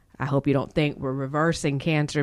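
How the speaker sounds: ordinary delivery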